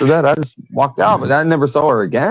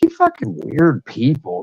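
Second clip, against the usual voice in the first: muttered under one's breath. Retelling gathering their things after a strange encounter, muttered under breath. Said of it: "saying it under my breath".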